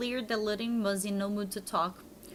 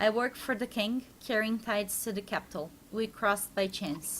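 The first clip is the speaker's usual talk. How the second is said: ordinary talk, nothing marked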